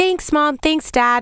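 put-on high, excited, screaming little toddler voice. Mother retells her 3-year-old opening Christmas dolls, imitating a 3-year-old screaming. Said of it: "She was screaming like".

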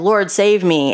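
put-on desperate, pleading voice. Retelling how Peter, sinking in the water, calls out: imitating a cry for help. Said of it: "he cried out for help".

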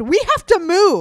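mock horrified, high, drawn-out shout. Retelling noticing people stuck behind while walking shoulder to shoulder: retelling a shout. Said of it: "I just shouted".

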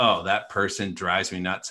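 ordinary talk, nothing marked

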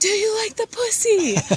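play-acted very high, shrill, blaring holler. Retelling what their hard-of-hearing dad yelled at Abby, retelling a yell. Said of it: "he just yells at her".

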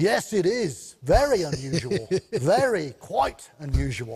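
put-on London Cockney accent. Retelling a signing, the speaker quotes Warwick Davis's reply as a Cockney impression. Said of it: "that's a pretty good Cockney accent".

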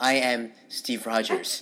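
slow, earnest put-on hero voice. Quoting a movie introduction scene: slow, intentional Captain America voice. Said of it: "speak slowly and be very intentional".

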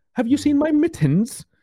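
put-on very high, stuck-up, snooty English accent. Speaker mocks how people from Toronto talk, in a mock stuck-up English accent. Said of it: "like they're stuck up English".

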